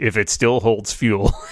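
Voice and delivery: grumbled line tacked on after. Retelling a scene, quoting the Mon Cal's aside: imitating a mutter. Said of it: "he kinda mutters".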